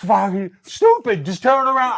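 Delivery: high, loud, drawn-out, exasperated, frustrated yell. Retelling yelling at a tag partner from outside the ring: retelling own frustrated yell. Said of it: "I'm just like".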